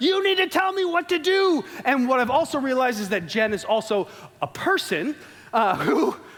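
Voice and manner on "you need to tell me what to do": high, frantic, panicky yelling. Speaker retells yelling out the window at Jen, retelling yelling at Jen. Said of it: "and I'm yelling like".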